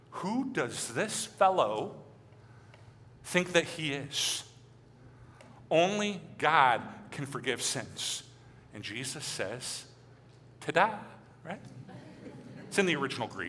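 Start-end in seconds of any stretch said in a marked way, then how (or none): 0.2-8.3 slow, mock scornful, contemptuous scoff. Preaching about Jesus forgiving sins, the speaker acts out the offended onlookers with mock disdain. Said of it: "You can hear the disdain in their voice".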